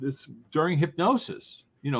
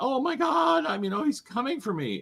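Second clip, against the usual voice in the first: put-on shrill, high, panicked, terrified screaming; 9 semitones higher than usual. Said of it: "he was screaming like".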